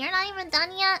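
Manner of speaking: put-on audacious tone. Speaker retells their mom's remark while they were cooking, imitating mom's audacity. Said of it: "She had the audacity to be like".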